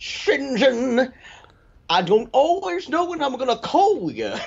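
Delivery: very high pitch with leaned-on comic rhythm. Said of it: "a [name] cadence to her voice".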